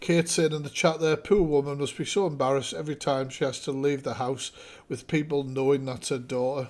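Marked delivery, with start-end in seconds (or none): none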